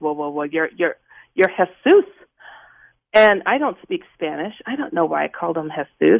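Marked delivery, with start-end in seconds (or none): 0.0-2.0 put-on stuttering, reenacted stammer. Retelling answering a man who asked who he was, reenacting stuttering. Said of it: "and I'm stuttering".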